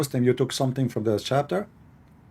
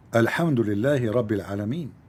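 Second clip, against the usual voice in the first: normal talking voice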